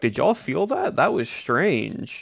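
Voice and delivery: put-on sarcastic tone, swooping sing-song. Recounting what a fellow player said during a game, imitating Owen's sarcasm. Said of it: "sounded very much like in the sarcastic tone of like".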